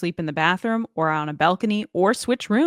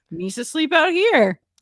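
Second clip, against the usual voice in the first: high, pitched-up creature voice; 9 semitones higher, 4 dB louder than usual. Imagining Jar Jar agreeing to sleep on the balcony: Jar Jar Binks voice. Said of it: "And he'd be like".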